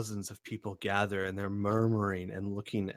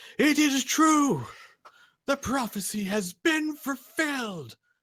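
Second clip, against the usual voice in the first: loud yell, very high pitch, slow and drawn out; 7 dB louder than usual. Retelling a man yelling to about thirty people, retelling a loud yell. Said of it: "yells in a loud voice".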